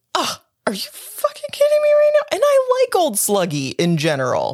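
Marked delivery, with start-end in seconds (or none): 0.1-2.3 very high, outraged, indignant outburst of disbelief. Retelling own reaction to a character interrupting someone: imitating own indignant reaction. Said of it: "I'm indignant. I was like".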